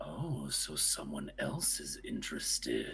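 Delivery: extremely deep near-whisper, hushed. Retelling the reply Peony hears, in an abysmally deep voice. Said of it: "you hear like an abysmally deeper voice respond".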